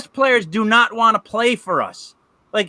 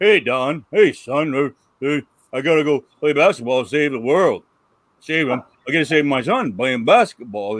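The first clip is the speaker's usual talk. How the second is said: deep, stiff, mocking put-on voice; 8 semitones lower than usual. Mocking an actor's stiff line delivery in a movie: mocking LeBron James voice. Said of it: "And his voice is like this".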